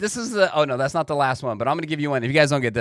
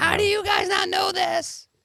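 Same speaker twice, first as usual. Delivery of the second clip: mock yelling, higher. Imagining the audience yelling the answer: imitating the audience yelling. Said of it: "they're probably yelling right now what it is".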